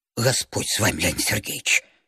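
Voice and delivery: frightened mutter. Narrator voicing a mother-in-law answering a man's outburst, frightened muttering. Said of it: "испуганно забормотал теща".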